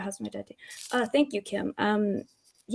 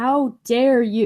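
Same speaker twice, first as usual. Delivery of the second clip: indignant, self-righteous, railing, booming bellow at full blast; 2 semitones higher, 8 dB louder than usual.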